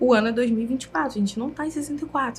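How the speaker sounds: whispering. Retelling talking quietly to a phone camera while filming: retelling own whisper. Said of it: "E falando baixinho".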